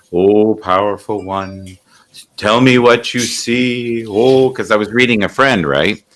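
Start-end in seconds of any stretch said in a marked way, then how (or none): 0.1-4.0 slow teasing mockery with see drawn out. Retelling how a woman being read mocked the reader: imitating a mocking woman. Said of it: "she was mocking me".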